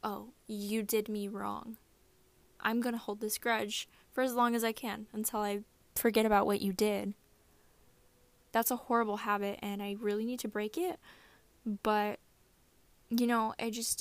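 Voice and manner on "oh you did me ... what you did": ordinary delivery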